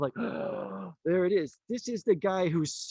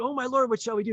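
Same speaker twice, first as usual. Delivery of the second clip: high, frantic, freaking-out, panicked cry; 5 semitones higher than usual. Retelling a story in a lesson, the speaker acts out the servant, imitating a panicked servant. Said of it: "he's freaking out".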